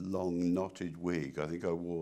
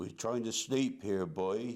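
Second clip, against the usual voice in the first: put-on rural West Country English accent; 3 semitones higher than usual. Recalling his one movie line, said as Harry Potter comes along: West Country accent. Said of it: "in a West Country accent".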